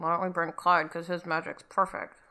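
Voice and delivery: low, very quiet, grumbling mutter under the breath. Told six people must face the trials, Genevieve mutters under her breath. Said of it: "Genevieve kind of mutters under her breath".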